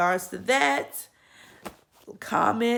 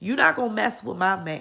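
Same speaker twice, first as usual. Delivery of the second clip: usual speaking voice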